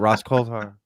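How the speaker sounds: rushed, quick, fading away at the end. Explaining how he says a name: quick, trailing-off Ross Coulthart. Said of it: "I say it quick and kind of let it fall off so you don't know".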